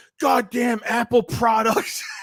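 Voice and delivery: put-on yelling in a very high register. Retelling a voicemail of a guy yelling at his phone: imitating a guy yelling. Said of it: "a guy yelling at his ph-".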